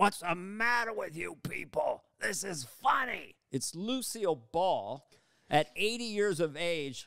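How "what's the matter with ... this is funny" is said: gruff, admonishing voice. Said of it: "I hear this gruff voice going".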